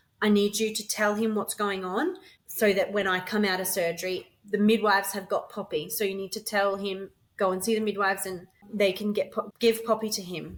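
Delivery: ordinary delivery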